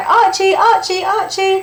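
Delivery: calling out high and loud. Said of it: "if I say".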